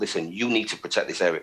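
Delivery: ordinary delivery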